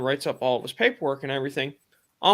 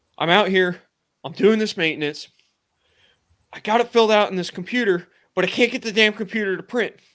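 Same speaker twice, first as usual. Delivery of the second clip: loud outburst in a mock panicked voice; 6 semitones higher, 5 dB louder than usual. Retelling what a man told him during maintenance, imitating his panic. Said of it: "I can hear the panic in his voice".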